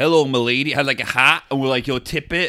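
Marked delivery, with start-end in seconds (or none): 0.0-0.7 put-on movie-cowboy voice. Speaker describing a guy in Carlow who went around doing a John Wayne impression. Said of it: "being like John Wayne".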